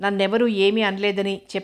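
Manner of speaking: ordinary delivery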